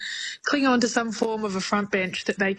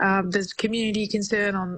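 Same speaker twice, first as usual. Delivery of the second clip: ordinary delivery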